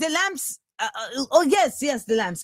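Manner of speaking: put-on Finnish accent sliding into a French sound. Retelling a man's remarks, the speaker attempts a Finnish accent that sounds French. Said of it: "I don't know how to do a Finnish accent. So sorry if it sounds French".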